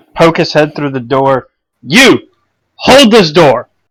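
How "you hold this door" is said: loud, steady, even shout. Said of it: "just shouts at the guard, unusually steady of voice".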